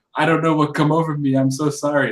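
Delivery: mock insincere, very sarcastic tone. Recapping a show, the speaker acts out a man's reply to a woman, mock sarcastic apology. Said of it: "Like really sarcastic".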